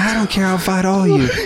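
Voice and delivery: high, mouthy, combative mock loudmouth yell. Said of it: "starts running his mouth".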